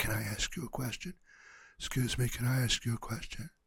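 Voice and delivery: hushed, very quiet whisper. Imitating people talking in a library: imitating a quiet whisper. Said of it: "it's a really quiet whisper".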